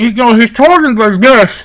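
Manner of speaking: fake talking with mouth full. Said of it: "says the food in his mouth while he's still talking".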